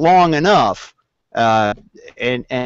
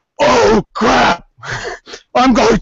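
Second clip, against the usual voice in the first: higher, strained monster voice. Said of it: "having to do a Cookie Monster voice".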